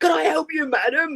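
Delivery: really loud high voice. Retelling how a male shop assistant offered her help, really loud voice. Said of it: "he said in a really loud voice".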